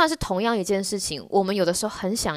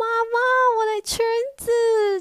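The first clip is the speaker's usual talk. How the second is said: put-on very high, drawn-out sobbing little-girl cry. Retelling how a little girl wailed to her mother: imitating a crying girl. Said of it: "她就开始大哭".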